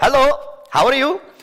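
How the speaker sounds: very high-pitched Indian-accented English. Speaker showing how their accent changed after living in india; indian english accent. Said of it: "my accent changed there".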